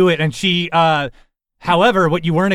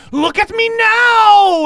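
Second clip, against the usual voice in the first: piercing, very high, very slow, long scream; 5 dB louder than usual. Voicing a character leaping into spinning blades: screaming. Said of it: "she screams".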